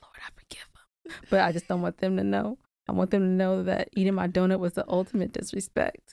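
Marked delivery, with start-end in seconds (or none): 0.0-1.2 very hushed, barely audible whisper. Acting out a deathbed prayer she would say: acting out a whisper. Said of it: "So I would just whisper it".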